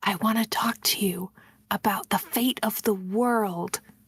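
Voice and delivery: hushed, conspiratorial voice. Meeting a newcomer who has heard good things about you: lowered voice. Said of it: "But I lower my voice".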